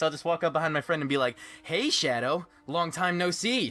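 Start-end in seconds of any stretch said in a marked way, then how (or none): 1.6-3.7 slow, drawn-out video game hero character voice. Showing how they walk up behind a friend: Jason Griffith's Sonic voice. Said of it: "impression of, uh, Jason Griffith's Sonic the Hedgehog".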